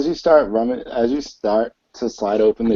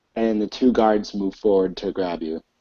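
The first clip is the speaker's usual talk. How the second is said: normal talking voice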